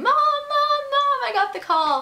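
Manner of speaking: loud, thrilled, high-pitched yell. Retelling running across the house after the phone call: retelling own past yelling. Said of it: "yelling my mom's name".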